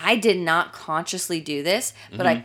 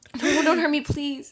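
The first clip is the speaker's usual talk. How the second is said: put-on pleading, begging voice, higher pitch; 9 semitones higher than usual. Retelling own words while play-fighting in a game: retelling own begging. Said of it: "just begging me".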